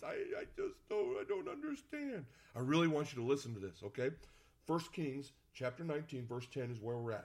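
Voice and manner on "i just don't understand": very high, swooping, complaining whine. Acting out praying when god isn't answering: mock-whiny voice. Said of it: "You know what the whiny voice?".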